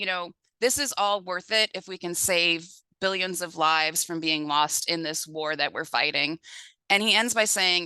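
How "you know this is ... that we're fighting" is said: usual speaking voice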